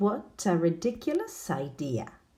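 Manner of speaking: ordinary talk, nothing marked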